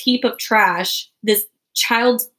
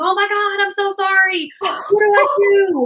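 put-on panicked screaming, higher pitch; 11 semitones higher than usual. Retelling finding a bird stuck in the car door: retelling own panicked scream. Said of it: "So then I'm screaming".

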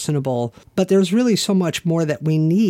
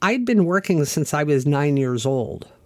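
usual speaking voice

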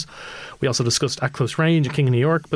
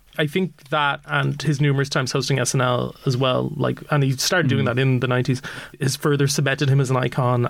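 ordinary delivery

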